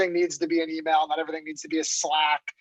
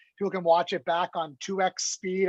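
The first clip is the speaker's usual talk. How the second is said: normal talking voice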